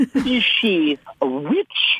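silly put-on comic voice, very high, very slow, swooping. Wondering whether someone is a witch, asked in a Monty Python voice. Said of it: "without using your Monty Python voice".

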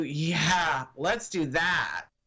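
dry, slow sarcasm with "yeah" drawn out. Explaining how line reading carries meaning in person, said sarcastic. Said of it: "oh, she's using sarcasm".

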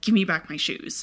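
imitated intense, deliberate delivery. Retelling a scene where a character turns to another: imitating an intense, deliberate demand. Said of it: "very, like, deliberately ... just very intense about it".

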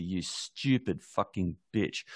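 put-on dismissive tone. Describing a scene, the speaker quotes the son's girlfriend standing over her: mock-dismissive line. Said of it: "just dismissively says to her".

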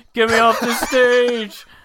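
very high, very loud, very slow, stretched mocking tone. Retelling a debate where Trump made fun of a rival: imitating Trump mocking someone. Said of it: "and he goes".

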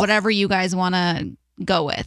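ordinary delivery

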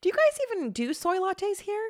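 pitch rises at the end on "here". Teaching intonation with a coffee-shop question, rising pitch on 'here'. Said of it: "My voice curls up".

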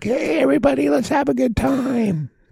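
very high, rough, raspy showman calling out. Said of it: "And Paul's like".

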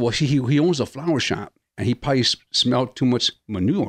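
normal talking voice

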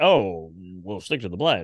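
very low, exaggerated deep voice, played straight.

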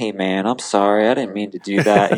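put-on relaxed, easygoing, laid-back Southern accent. Retelling a rider apologizing after a crash: imitating calm quiet Southern accent. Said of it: "his Southern accent, he's all chill and quiet".

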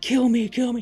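put-on yelling. Retelling a story scene where one character demands to be killed: imitating someone yelling. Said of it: "yelling at him".

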